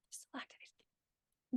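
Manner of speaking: hushed whisper of awe.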